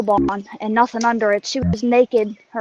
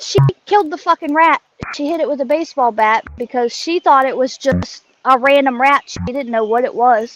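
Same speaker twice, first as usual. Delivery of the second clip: ordinary talk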